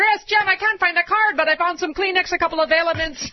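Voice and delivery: put-on heavy Minnesota accent. Host acts an old minnesota woman digging through her purse, heavy minnesota accent. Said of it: "Heavy Minnesota accent".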